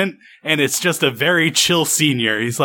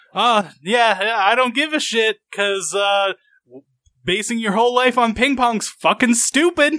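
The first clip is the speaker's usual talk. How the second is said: mock loud, higher gloating victory boast; 7 semitones higher than usual. Retelling a character's words after a victory: imitating a loud boast. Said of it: "loudly goes over and is like".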